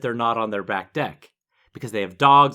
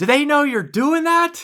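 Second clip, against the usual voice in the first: put-on shout, higher and louder; 5 dB louder than usual. Retelling a neighbor's question from across the street: imitating a neighbor shouting. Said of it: "Would you quit shouting?".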